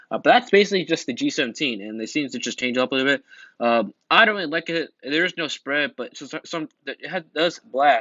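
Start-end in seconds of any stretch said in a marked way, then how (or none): 5.0-8.0 stuttering, stumbling, tripping over the words. Reviewing a game weapon, the speaker talks while stuttering. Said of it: "My stuttering, Jesus Christ".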